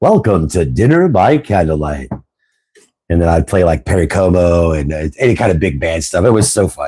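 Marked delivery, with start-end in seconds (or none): 0.0-2.1 put-on old-time radio announcer voice, swooping pitch. Recalling hosting a dinner-hour music show, trying the old radio host voice. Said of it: "See if I can still do the voice".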